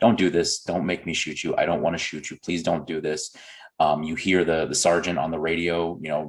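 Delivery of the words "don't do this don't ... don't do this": put-on, hushed, whispered pleading tone. Describing body-cam footage of a cop hiding behind a tree, imitating a whispered plea. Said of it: "he's begging them, like he's whispering to himself".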